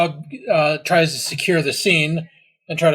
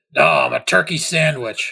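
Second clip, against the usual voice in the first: mocking, sarcastic, smart-aleck tone. Voicing a character leaning over to answer: sarcastic. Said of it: "sarcastically and says".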